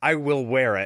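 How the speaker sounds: usual speaking voice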